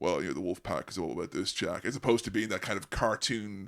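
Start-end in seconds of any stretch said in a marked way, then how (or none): 0.0-1.9 low, flat monotone delivery. Imitating Wolfpack-era Hulk Hogan talking: monotone Hulk Hogan voice. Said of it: "now he's speaking like this in a real kind of monotone".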